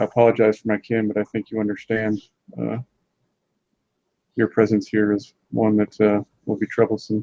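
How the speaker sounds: dropped voice, spoken aside. Role-play character moving aside to speak to a companion, lowered voice. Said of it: "lower my voice and say".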